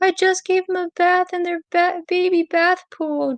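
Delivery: mock, very high, slow, tearful crying voice. Retelling finding the ducks gone after their bath: imitating own past crying. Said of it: "I was crying".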